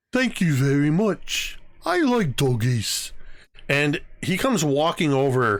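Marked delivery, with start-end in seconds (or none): 0.1-3.1 voice of a giant ogre. After being allowed to pet the dog, the twelve-foot ogre speaks, ogre voice. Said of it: "this this ogre's like twelve feet tall".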